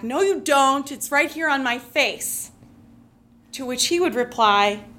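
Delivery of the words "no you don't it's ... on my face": put-on giggling little kid's shout. Retelling a childhood reply to a teasing father: imitating a giggling child's shout. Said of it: "would giggle and shout back".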